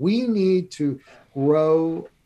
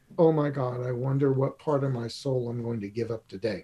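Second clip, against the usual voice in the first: mock muttering, much lower and quieter; 5 semitones lower, 5 dB quieter than usual. Retelling what she said under her breath before the session started, imitating her muttering. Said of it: "i heard her say under her breath".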